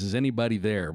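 ordinary talk

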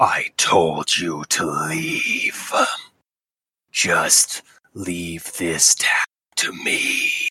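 very low, slow possessed voice. Voicing a possessed warrior who blocks the way: possessed voice, not his own. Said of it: "he talks, but it's not his voice".

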